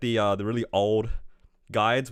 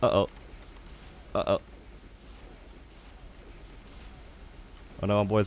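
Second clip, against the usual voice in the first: whispered, breathy, panicked muttering; 3 semitones lower, 6 dB quieter than usual. Playing a game boss fight, something going wrong: panicking. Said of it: "I'm panicking".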